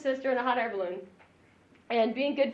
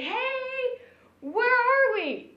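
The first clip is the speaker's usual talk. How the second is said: slow, high-pitched yelling. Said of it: "they yell down and they say".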